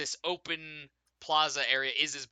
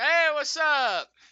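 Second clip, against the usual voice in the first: put-on slightly drunk, tipsy, very high voice; 14 semitones higher, 8 dB louder than usual. A person the player grabs for directions greets them: slightly drunk voice. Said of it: "they're like slightly inebriated".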